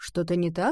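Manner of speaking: ordinary delivery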